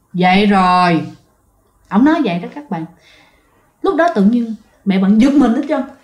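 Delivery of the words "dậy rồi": put-on low, rumbling, strange old man voice. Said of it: "giọng đàn ông lớn tuổi mà ồn".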